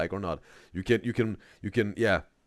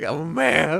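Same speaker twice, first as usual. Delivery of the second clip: loud, very high squeaking voice crack on "man"; 9 semitones higher, 7 dB louder than usual. Mocking a man who insists he is a man, imitating a voice crack. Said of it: "This voice crack".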